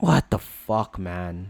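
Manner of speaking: irritated, annoyed whispered grumble under the breath. Venting after a losing trading session, annoyed. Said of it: "I'm I'm actually annoyed".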